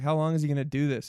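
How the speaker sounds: normal talking voice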